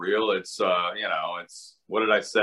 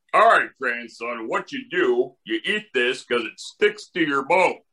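put-on grandpa voice, higher; 3 semitones higher than usual. Retelling an old oatmeal commercial, playing the grandpa: Wilford Brimley impression. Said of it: "I feel like he's here with us".

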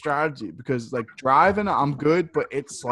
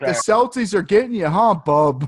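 loud, high, mocking, ribbing, needling taunt; 5 semitones higher, 6 dB louder than usual. Retelling what Trev said to someone: imitating Trev. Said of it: "Trev was like".

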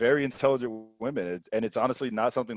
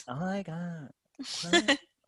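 put-on high, drawn-out Valley Girl voice; 6 semitones higher, 8 dB quieter than usual. Acting out a date who doesn't get the joke: Valley Girl voice. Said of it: "Just jump right to the Valley Girl".

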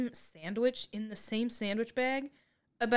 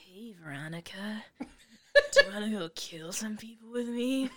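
slow, drawn-out put-on film-star voice. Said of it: "They kinda talk like him".

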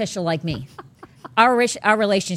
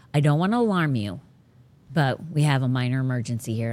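very serious tone, lower pitch; 6 semitones lower, 3 dB quieter than usual. Retelling a partner's announcement of a minor emergency: imitating a very serious tone. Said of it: "And he's very serious".

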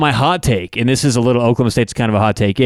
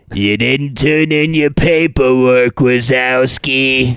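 deliberate, very slow cartoon drawl, every word dragged. Talking about getting into character for impressions, then doing a Roz impression. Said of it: "You got to put yourself into character".

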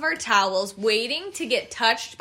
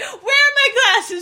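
put-on yell, higher and louder; 12 semitones higher, 6 dB louder than usual. Retelling how someone yelled as the water washed their stuff away: imitating Melanie yelling. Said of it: "she's yelling".

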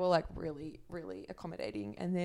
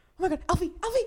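mock shrill, very high, very loud panicked cry; 12 semitones higher, 11 dB louder than usual. Retelling how the dog's owner called for her dog: imitating a panicked woman. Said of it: "she's freaking out".

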